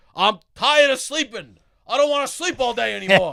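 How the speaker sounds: put-on very high, shrill old man's yell. Retelling the dad's reply about getting up early: imitating dad yelling. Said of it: "he yells at me".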